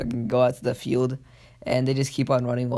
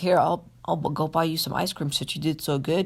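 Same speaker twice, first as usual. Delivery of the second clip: put-on young child voice; 4 semitones higher than usual. Retelling a scene of Naruto and Sasuke coming home from the academy: kid voice as Naruto. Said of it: "Trying to do like a kid voice".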